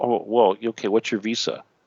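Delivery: ordinary delivery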